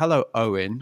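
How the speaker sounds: put-on aggressive voice. Retelling how an interviewee greeted the photographer: imitating Jamie greeting aggressively. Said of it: "quite, quite aggressively".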